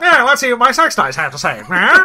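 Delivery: put-on fast high old-gangster voice. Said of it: "he sounds like an old gangster".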